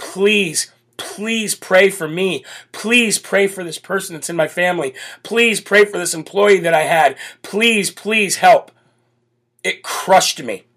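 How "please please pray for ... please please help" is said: earnest, repeated, acted-out pleading voice. Retelling messages from people asking for prayer: imitating people begging for prayer. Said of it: "somebody reaching out to you saying".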